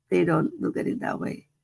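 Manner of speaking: plain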